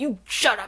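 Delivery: pissed-off outburst. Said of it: "he just gets pissed and he's like".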